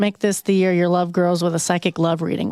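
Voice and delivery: ordinary talk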